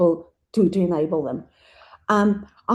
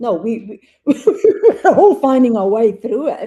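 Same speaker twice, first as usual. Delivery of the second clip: loud, chuckling, laughing through the words; 4 semitones higher, 7 dB louder than usual.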